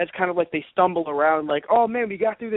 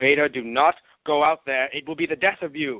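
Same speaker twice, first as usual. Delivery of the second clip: put-on evil emperor voice, lower; 4 semitones lower than usual. Imagining what Palpatine would say to Vader: Palpatine voice. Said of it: "I can just imagine him just going".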